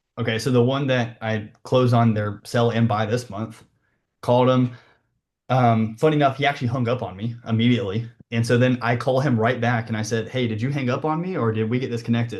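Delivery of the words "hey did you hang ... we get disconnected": mock playful, light, teasing, joking tone. Retelling calling back a man who hung up on you, retelling a joking tone. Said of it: "Kind of in a joking tone".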